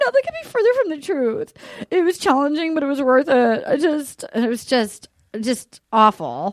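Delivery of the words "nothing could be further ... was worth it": acted-out weepy, sobbing, tearful crying voice. Retelling a reality show scene, imitating Nicole crying. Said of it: "Nicole crying".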